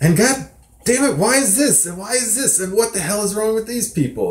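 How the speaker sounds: complaining rant, not full rage. Describing how two people rant, imitating Max ranting. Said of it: "Max is sort of like".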